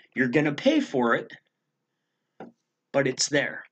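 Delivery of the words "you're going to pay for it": plain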